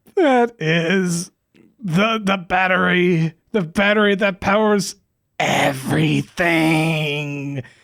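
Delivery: slow, ominous, foreboding delivery. Voicing a professor explaining a glowing battery: foreboding tone. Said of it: "she says in a very, uh, foreboding tone".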